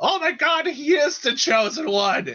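high, loud, awed shout. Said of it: "somebody from the crowd shouts".

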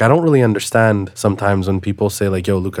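plain

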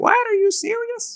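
squeaky, very high-pitched put-on mother voice. Retelling telling Mom about cold showers, imitating Mom. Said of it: "she doesn't speak like this, by the way".

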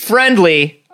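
"friendly" said sarcastically, in audible scare quotes. Describing two odd choices, with air quotes on friendly. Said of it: "You can hear me doing the air quotes with my voice".

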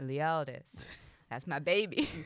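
put-on American accent. Speaker showing how to say the name Leodis; put-on American accent. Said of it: "you gotta do it in an American accent".

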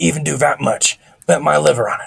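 put-on raspy, rough, scratchy, high boy's voice. Narrator reads the scratchy-voiced boy talking as Thomas listens, scratchy boy's voice. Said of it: "The scratchy voice boy was talking".

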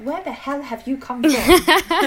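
loud, slow, incredulous outburst.

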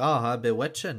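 put-on Scottish accent. Imagining a Scottish person saying a movie line: put-on Scottish accent. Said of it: "I can just hear a Scottish person be like".

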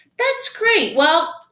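high, sing-song fake politeness.

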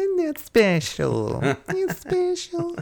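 pitched way up, swooping. Urged by the other host to do it, doing his Church Lady impression. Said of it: "to hone my church lady impression".

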